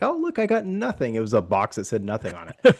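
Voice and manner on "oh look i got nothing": put-on thrilled little kid, pitched very high. Retelling a video of a child opening presents: imitating an excited kid. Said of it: "the kid's all excited".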